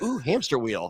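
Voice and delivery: sudden, distracted ooh exclamation at the start. Imitating Carolyn getting distracted: imitating Carolyn. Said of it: "she saw the big wheel and she's like".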